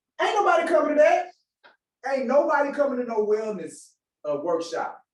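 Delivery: mock smug, cocky tone. Retelling a reply to an engagement officer: retelling own smug confident reply. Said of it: "I said it very confidently too, kinda smug".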